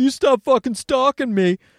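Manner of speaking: put-on drunk yelling. Retelling a drunk guy yelling at a lady, imitating his drunk yelling. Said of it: "drunk guy in there just yelling".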